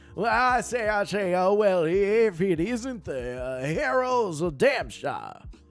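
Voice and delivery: put-on jittery, stammering old-South drawl, loud and high. Voicing a thief-rogue character greeting the Heroes of Damshire, in a Foghorn Leghorn southern drawl. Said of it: "jittery, uh, southern drawl. A foghorn. Leghorn".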